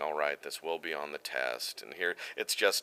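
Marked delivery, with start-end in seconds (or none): 0.0-1.8 flat, disinterested, deep, soft lecturing monotone drone. Voicing Shin Fukuhara, a principal turned narrator: very deep monotone voice. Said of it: "it's just very deep, saying".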